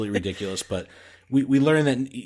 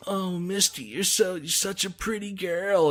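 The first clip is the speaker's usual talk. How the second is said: creepy, sweet man's voice, pitched up; 8 semitones higher, 4 dB quieter than usual. Describing a cartoon scene, imitating the creepy guy as he talks to Misty. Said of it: "And he's the creepiest".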